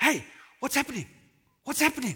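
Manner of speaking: play-acted excited calling. Retelling a story, the speaker acts out a man hearing a sudden noise, imitating an excited man. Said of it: "He was excited".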